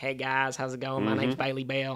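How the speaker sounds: put-on thick, strong American Southern accent. Describing a very southern acquaintance's introduction, imitating Billy Bell's Southern accent. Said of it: "strong accent".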